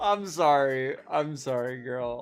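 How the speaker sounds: slow speech, words broken up by laughter. Apologizing to someone in a video after laughing: laughing while talking. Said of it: "I don't mean to laugh".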